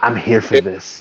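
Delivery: slow, hushed, quiet half-whisper. Retelling what was said into a man's ear before a fight: imitating a half-whisper. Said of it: "I whispered in his ear".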